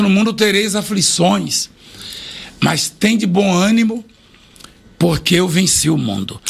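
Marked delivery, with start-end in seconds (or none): none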